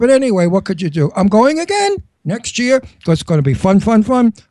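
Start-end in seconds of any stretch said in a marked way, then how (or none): none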